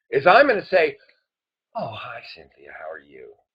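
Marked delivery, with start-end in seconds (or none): 1.7-3.3 hushed, very quiet, soft, low, gentle voice. Demonstrating a greeting by mirroring the other person's voice: soft, gentle voice. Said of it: "I'm immediately going to mirror her voice".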